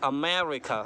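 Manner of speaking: America with second syllable "me" stressed and stretched. Hindi pronunciation lesson on america, stress on 'me' in america. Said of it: "मैं को खींचना है".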